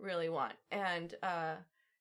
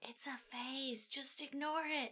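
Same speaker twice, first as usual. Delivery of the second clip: put-on stage whisper, higher and quieter; 6 semitones higher, 8 dB quieter than usual. Retelling a movie scene where the dad answers the mom: imitating a stage whisper. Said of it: "stage whispering".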